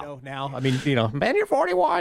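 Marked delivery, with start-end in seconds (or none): 1.1-2.0 very high-pitched voice. Imitating how his mother would talk about it now: imitating his mother. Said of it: "Spot on impression".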